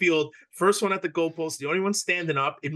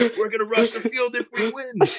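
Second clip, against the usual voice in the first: put-on screaming, higher pitch; 6 semitones higher than usual. Retelling what a brother shouted at the game: imitating Alex screaming. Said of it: "he was screaming".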